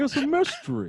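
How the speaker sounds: very high, loud put-on talk through full mouth. Retelling what a girl said when questioned, putting on talking with mouth full. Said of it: "Mouth full".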